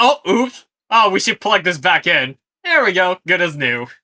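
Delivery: very loud, high character voice. Acting out two henchmen fixing their mistake: Bebop and Rocksteady voice. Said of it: "They're like".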